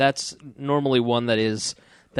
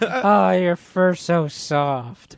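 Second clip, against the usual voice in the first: mock drunk woman voice, higher pitch; 4 semitones higher than usual. Retelling a wife running through the house calling the cat: imitating a tipsy wife. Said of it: "she's drunk".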